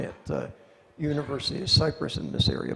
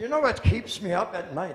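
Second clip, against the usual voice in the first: put-on Scottish brogue, pitched up; 6 semitones higher than usual. Retelling what a security chief said over a beer: imitating a Scottish accent. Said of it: "he was Scottish".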